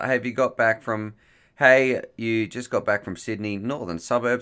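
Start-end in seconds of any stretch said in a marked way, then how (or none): none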